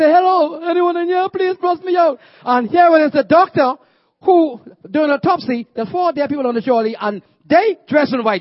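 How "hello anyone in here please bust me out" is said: put-on tearful, high crying plea. Speaker telling the church about being stuck in a morgue, retelling his crying plea. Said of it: "And so I start crying".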